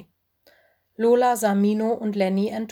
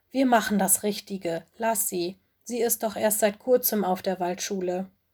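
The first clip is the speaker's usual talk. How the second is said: ordinary delivery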